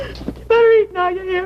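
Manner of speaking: tearful, sobbing, crying voice. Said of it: "make her stop crying".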